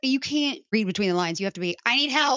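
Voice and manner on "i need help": put-on loud, high-pitched cry, words spelled out. Showing how to ask a partner for help: loud. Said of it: "That was a little loud".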